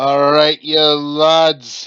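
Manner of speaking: put-on failed Scottish accent. Greeting viewers at the start of a stream: bad Scottish accent. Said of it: "I can't do a Scottish accent to save my life".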